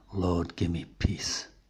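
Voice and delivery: soft, slow murmur under the breath. Quoting the rare words of a man who sits rocking in the garden, murmuring. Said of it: "When he does it is a murmured".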